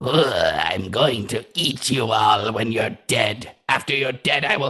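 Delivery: oozing, slimy, bizarre, strange monster voice. Voicing a creature after a missed attack: slimiest, strangest creature voice. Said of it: "the slimiest and strangest of voices".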